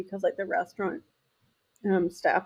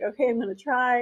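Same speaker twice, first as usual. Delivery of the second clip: usual speaking voice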